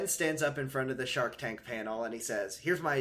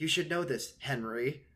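casual, understated throwaway delivery. Retelling how the girl in the episode says a line: imitating someone speaking quietly. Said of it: "really quietly".

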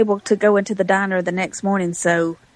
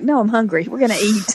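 usual speaking voice

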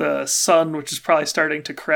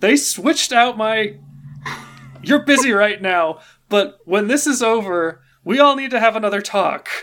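seething, fuming anger, high-pitched; 6 semitones higher, 3 dB louder than usual. Voicing a fuming character who demands another talk: fuming. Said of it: "next to a fuming chalice".

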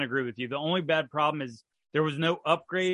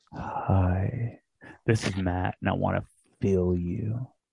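very low, slow, drawn-out fake ASMR voice; 8 semitones lower than usual. Starting a joke asmr episode for the others: put-on asmr voice. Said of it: "let's do a A S M R e-".

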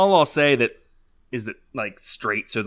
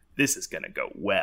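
muttered under breath, lower and quieter; 4 semitones lower, 7 dB quieter than usual. Retelling what a guy muttered after being told to sit down, under his breath. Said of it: "says under his breath".

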